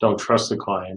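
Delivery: ordinary talk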